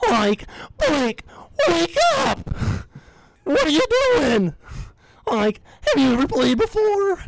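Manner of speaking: very high, swooping cartoon slacker voice. Asked to impersonate a coach yelling at Mike, the speaker uses the Shaggy voice. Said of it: "but in the Shaggy voice".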